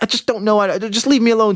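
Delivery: very high, furious, angry screaming. Acting out a girlfriend screaming at her partner: imitating a girlfriend screaming. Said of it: "your girl's screaming at you and she's like".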